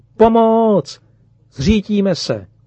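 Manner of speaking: full-throated, high-pitched, desperate scream of despair. A daughter on a plane whose pilot has collapsed, desperate scream. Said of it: "začala z plná hrdla zoufale křičet".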